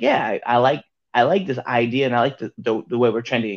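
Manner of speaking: ordinary talk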